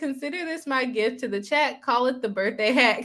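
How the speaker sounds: ordinary talk, nothing marked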